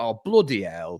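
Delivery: put-on thick, broad Yorkshire accent. Retelling his reaction to the Seahawks playing badly, in a strong Yorkshire accent. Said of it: "Like my Yorkshire accent sort of changed".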